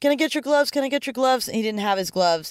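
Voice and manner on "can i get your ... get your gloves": put-on child's high-pitched shout. Retelling a little kid among the fans begging for gloves, imitating a kid shouting. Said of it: "shouting like".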